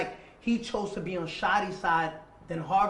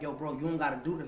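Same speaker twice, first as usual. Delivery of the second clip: put-on begging, pleading, lower; 5 semitones lower, 4 dB quieter than usual. Retelling how they begged a gunman not to shoot: retelling pleading for life. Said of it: "When you're pleading for your life".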